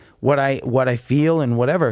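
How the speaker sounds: ordinary delivery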